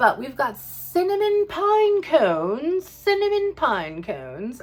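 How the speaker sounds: put-on, lilting, sing-song British accent. Introducing a scent, the speaker names it in a british accent. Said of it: "I'm talking in a British accent".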